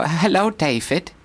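high, bright posh English with German accent. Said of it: "a German speaking English ... sound like a posh English person".

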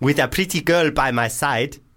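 put-on clearly shifted South African accent. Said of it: "is this going full African".

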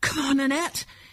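gasped, out of breath. A figure dragging a sledge reaches annette, too winded to speak; gasped, out of breath. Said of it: "he gasped".

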